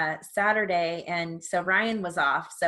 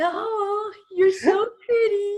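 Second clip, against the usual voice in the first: put-on cooing baby talk, very high and loud; 13 semitones higher, 5 dB louder than usual. Asked to show the voice used with the baby, in baby talk voice. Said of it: "Let me hear your Paisley voice".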